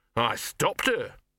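speaking defiantly. Narrator reads a male character adding a remark, defiant. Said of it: "he added defiantly".

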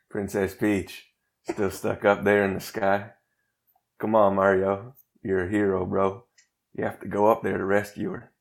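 heavy Southern accent with a twang. Going for it without knowing the voice, doing a Matthew McConaughey Southern twang. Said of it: "All I could think was Southern twang".

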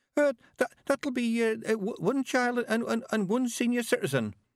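nervous, quavering, trembling voice. Asked by Granny for two tickets, the young man answers in a quavering voice. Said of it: "the young man quavered".

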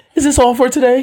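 small, little, very high-pitched voice.

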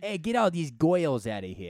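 mock New Jersey accent. Riffing on accents with the other speaker, imitating a new jersey accent.

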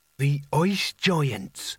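horror-struck, horrified stage whisper, barely daring. Reading a story aloud, the narrator voices a character's line in a horrified half-whisper. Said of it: "said Nigel in a horrified whisper".

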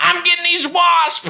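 very high-pitched put-on country accent. Recalling hitting classroom wasps with a shoe, in a country accent. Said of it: "I was the country Bill who was like".

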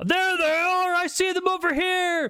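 very high-pitched calling out. Voicing a soldier who spots the party in the jungle, calling out. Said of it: "calling out".

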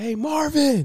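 acted-out, very high, called-out hailing shout. Recounting a story, the speaker and another man call out to someone: retelling a yell. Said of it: "me and Sadiq yell".

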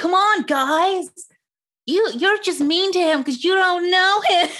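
high, acted, teen-drama style delivery. Retelling what a show character says about her boyfriend: imitating the actor playing Annie. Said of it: "my impression of the actor".

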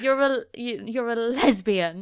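mock accusatory, damning voice. Discussing a show's scene, the speaker retells Jules's mum confronting her, mock-damning. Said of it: "says it in such a damning way".

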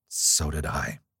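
low-voiced, nervous tone. Gabriel answers the frightened woman drawing close to him, in a low, nervous voice. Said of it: "answered Gabriel in a low, nervous voice".

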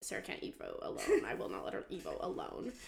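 put-on protective tone.

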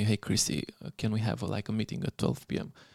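put-on whispering. Retelling how the manager asked for a meeting: imitating someone whispering. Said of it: "he whispers me".

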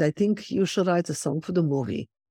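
put-on Swiss German accent. Retelling what the director told you at a pre-production meeting, in Marc Forster's Swiss German accent. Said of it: "in his Swiss German accent".

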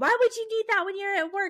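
high, screamed, going-off rant. Recounting him coming down at 2 in the morning, retelling someone screaming. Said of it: "just screaming".

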